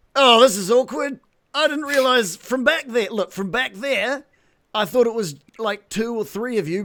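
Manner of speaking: very high-pitched bugbear creature voice. Voicing a Bugbear that skids to a halt before the party: Bugbear voice. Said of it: "He's like".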